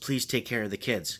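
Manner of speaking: imitated whisper. Retelling what a wife said before the ambulance left: imitating a whisper. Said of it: "she whispered to me".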